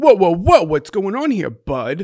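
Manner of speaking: put-on old-time Brooklyn ballplayer voice, Brooklyn accent. Telling how Zach reacted to a show she started watching; imitating Zach's 1940s Brooklyn voice. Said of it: "my 1940s Brooklyn like baseball player voice".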